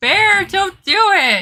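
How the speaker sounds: very high-pitched, shrill shouted yell. Retelling a woman yelling at a bear, imitating a high-pitched yell. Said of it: "it was really high pitched".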